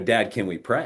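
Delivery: ordinary delivery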